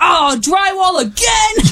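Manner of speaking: put-on crabby tone, loud and high. Imitating a co-host doing home projects on video: imitating Skip, crabby. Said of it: "we would be so crabby and funny".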